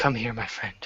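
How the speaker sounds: feeble, weak, very soft and faint voice. Narrator voicing a man at his bedside beckoning a player over: weak voice. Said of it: "beckons to you with a weak voice".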